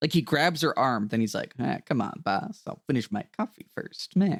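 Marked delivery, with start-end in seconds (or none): 1.6-4.4 mock chummy on top, menace underneath. Imitating a character who grabs his wife's arm: imitating Hank's fake-nice, threatening tone. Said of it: "right in between threatening and, like, "Ha ha, I'm niceys,"".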